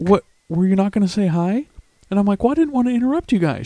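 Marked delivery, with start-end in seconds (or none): 0.0-1.7 acted, caught-off-guard, all-surprised tone. Retelling how a woman turned around after the speaker walked away, imitating someone all surprised. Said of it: "she's looking at me like all surprised".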